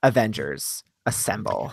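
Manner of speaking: mock deadpan whisper, unbothered, no effort at all. Imagining how she will say the line without yelling, mock deadpan, not yelled. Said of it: "RBF and just be like".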